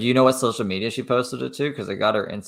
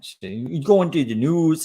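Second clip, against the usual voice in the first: bad Minnesota accent, pitched higher; 7 semitones higher, 4 dB louder than usual. Mimicking a woman heard in a video, in a terrible Minnesota accent. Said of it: "I'm doing a terrible Canadian accent or Minnesota accent".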